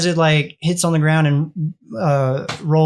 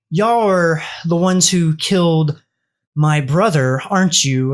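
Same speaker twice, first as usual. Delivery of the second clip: anger held just under the surface. Voicing a pacing figure speaking to the group: holding back anger. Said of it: "holding back some anger".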